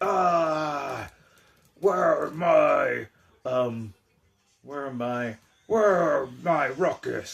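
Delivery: loud, very slow, drawn-out hollering. Playing with toy figures for the grandson, voicing a figure that yells. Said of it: "and he yells".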